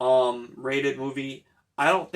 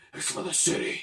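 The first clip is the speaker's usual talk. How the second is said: throat-straining put-on voice, pitched higher; 2 semitones higher, 5 dB quieter than usual. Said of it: "doing that voice a lot bothers your throat".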